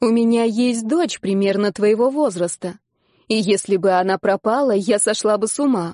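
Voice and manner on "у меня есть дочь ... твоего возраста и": ordinary delivery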